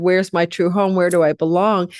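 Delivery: ordinary talk, nothing marked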